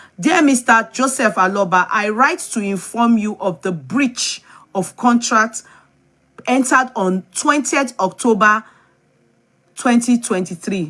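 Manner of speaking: plain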